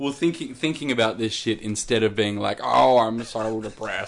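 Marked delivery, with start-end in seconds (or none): 2.6-4.1 every word dragged out very slowly. Imitating Bam Margera while discussing what would help him: Bam Margera impression. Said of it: "I shouldn't do his voice".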